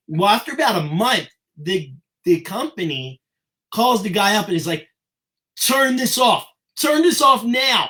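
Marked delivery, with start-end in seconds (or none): 5.6-7.9 irate, high-pitched voice. Retelling the company's phone call demanding the campaign stop: imitating an irate caller. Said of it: "and irate".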